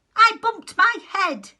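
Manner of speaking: cross little voice, high and loud. A little rabbit stuck down a well answers a caller, in a cross little voice. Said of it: "A rather cross little voice answered".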